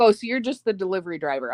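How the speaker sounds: normal talking voice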